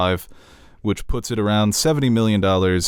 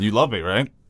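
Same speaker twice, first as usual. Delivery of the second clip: put-on bored old deity voice; 2 semitones higher than usual. Imitating God ordering Abraham to kill his son: imitating a bored God. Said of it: "he's been doing this for so long, he's just got bored".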